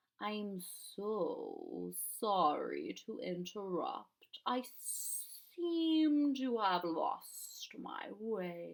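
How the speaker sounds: deep, sibilant, swooping voice leaning on s sounds. Narrator voicing the Splintercat who appears at Lindy's bed; deep, sibilant voice. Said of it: "his voice both deep and sibilant".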